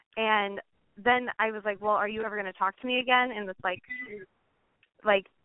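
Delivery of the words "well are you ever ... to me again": furious, accusing, really angry tone. Retelling own past question to him: imitating own angry tone. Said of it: "this really angry tone".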